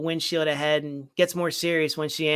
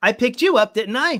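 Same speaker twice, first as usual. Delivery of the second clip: mock sarcastic, raised voice through a laugh; 7 semitones higher, 8 dB louder than usual. Retelling a movie scene, quoting the male lead's reply: imitating a sarcastic reply. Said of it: "kind of, you know, sarcastically".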